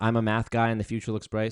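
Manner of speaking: plain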